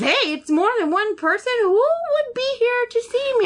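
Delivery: very high, frantic, rising, freaked-out panic. Retelling asking the front desk lady about unknown visitors, retelling freaking out. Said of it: "I'm like freaking out".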